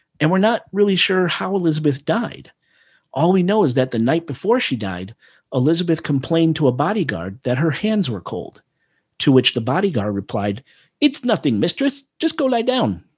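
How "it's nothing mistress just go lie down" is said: very high, rough attempt at a Hungarian accent. Retelling a bodyguard's reply to Elizabeth, attempted Hungarian accent. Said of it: "Attempt at an accent".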